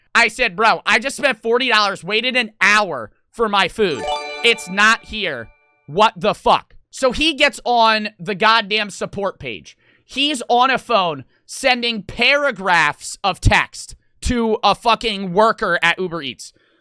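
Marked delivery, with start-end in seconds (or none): none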